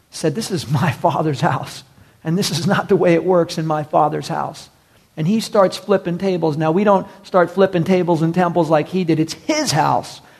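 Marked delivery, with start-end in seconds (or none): none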